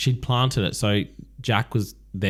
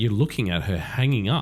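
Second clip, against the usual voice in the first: ordinary talk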